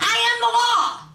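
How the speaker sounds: yelling, high in pitch and loud. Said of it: "she yelled".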